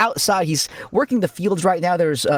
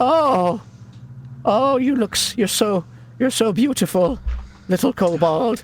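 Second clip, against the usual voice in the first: charmed, besotted, smitten, lovestruck gushing; 4 semitones higher than usual. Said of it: "he is charmed by you".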